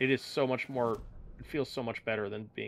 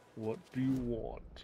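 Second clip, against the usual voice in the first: deep put-on baritone, quieter and slower; 3 semitones lower, 8 dB quieter than usual. Retelling what the dog said when asked to speak, in a deep baritone voice. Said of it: "And then it says in a deep baritone voice".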